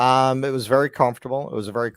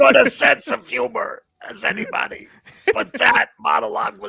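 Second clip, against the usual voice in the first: very high, raspy put-on voice, a bit loud; 6 dB louder than usual. Discussing someone who bailed, the speaker quotes him: RFK Jr. impression. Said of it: "does a much better R F K Junior than I do".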